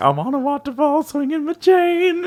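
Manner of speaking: silly villain voice. Retelling a movie villain's line on a waterfall: [name]'s silly voice. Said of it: "doing, like, a silly voice".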